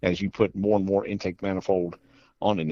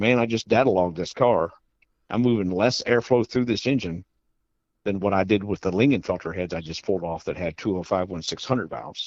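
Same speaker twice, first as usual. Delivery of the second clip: ordinary talk, nothing marked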